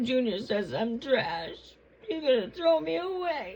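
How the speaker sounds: put-on high-pitched sobbing, heavily laid on. Mama, told by Junior she is trash, complains to him: mock crying. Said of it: "Now you got me crying".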